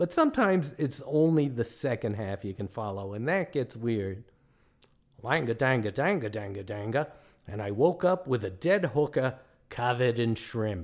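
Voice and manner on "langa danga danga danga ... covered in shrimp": terrible, clumsy put-on Australian accent. Joking about following Australians, terrible Australian accent. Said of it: "my Australian accent is terrible".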